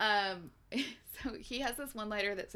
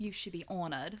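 attempted, put-on British accent; 2 semitones lower, 3 dB quieter than usual. Performing a line after being asked, in a british accent. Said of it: "Say it in the British accent".

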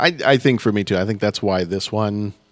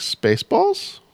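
tentative, uncertain, rising intonation. Repeating the chosen film title: said with a question mark. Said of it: "I'm gonna say it with a question mark".

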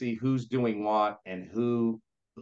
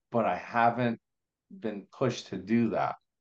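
flat, unvarying, machine-like monotone; 3 dB louder than usual. Retelling a man's answer to the speaker's question, imitating a monotone speaker. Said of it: "monotone and very".

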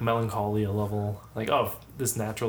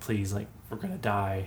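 put-on, mock pleading, begging tone; 5 dB quieter than usual. Retelling a story of people begging a robber, acting out begging. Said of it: "they're like begging".

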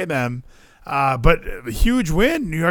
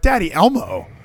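put-on small, simple little kid voice; 3 semitones higher than usual. Retelling what Ralphie said during a commercial break: imitating Ralphie. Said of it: "Ralphie's sitting there like".

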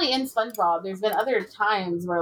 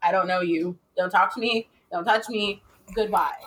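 put-on cat voice. Acting out how the cat behaves outside: voicing the cat outside. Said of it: "that's my cat".

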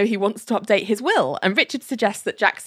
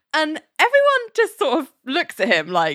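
plain

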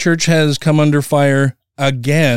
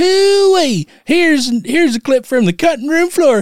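put-on very high, sped-up, grizzled old prospector voice; 13 semitones higher than usual. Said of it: "so it sounds like an old prospector".

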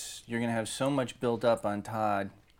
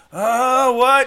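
put-on very high, very loud, shrill, frail old-man cry; 17 dB louder than usual. Retelling a Godfather scene, imitating the old man who can barely hear. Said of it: "I love your impression".

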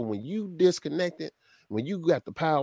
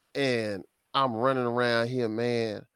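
usual speaking voice

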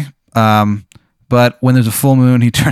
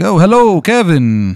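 high voice like a caped vampire count; 5 semitones higher than usual. Describing a roommate to another player, voicing him: Dracula voice. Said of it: "that's how he talks".

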